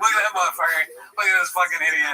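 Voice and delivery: fast, mocking jeer through bursts of laughter. Retelling pointing and laughing at a guy, retelling laughing mockery. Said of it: "I'm like pointing, laughing".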